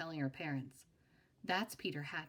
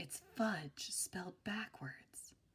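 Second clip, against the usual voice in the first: hushed, secretive whisper; 5 dB quieter than usual. Narrator reading a character's whispered line in a story: whispered. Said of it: "Then he whispered again".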